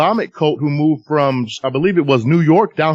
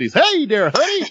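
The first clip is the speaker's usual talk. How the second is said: fifties-style man's voice, pitched very high; 11 semitones higher than usual.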